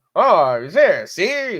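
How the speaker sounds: put-on old-timey 1950s accent. Describing the fake accent old TV actors used, demonstrating an old-timey 1950s accent. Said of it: "Like that kind of accent".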